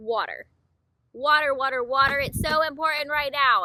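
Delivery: loud, forceful, aggressive and pushy emphasis. Reading a card aloud for viewers: loud and aggressive. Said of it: "I'm sorry I'm being loud and aggressive".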